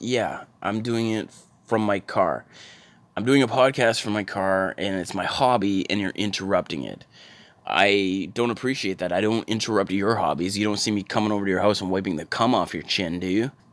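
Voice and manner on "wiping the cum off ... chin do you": normal talking voice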